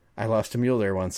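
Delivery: ordinary delivery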